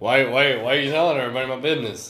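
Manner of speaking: put-on drunken voice. Mocking the other speaker for cataloging shots: imitating a drunk alcoholic. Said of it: "spoken like an alcoholic".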